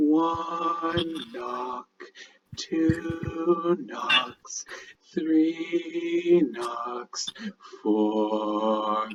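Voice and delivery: very faint, very scratchy, slow, barely audible rasp. Voicing an unseen figure heard around the corner: very faint, very scratchy voice. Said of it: "a very faint, but a very, very scratchy voice".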